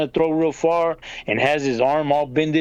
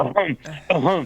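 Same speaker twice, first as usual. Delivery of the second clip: put-on hacking, coughing voice. Retelling how a man answered while still hacking: imitating someone still hacking. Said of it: "still hacking a little bit and".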